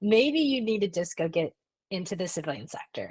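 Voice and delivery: ordinary talk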